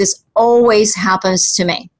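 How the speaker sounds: plain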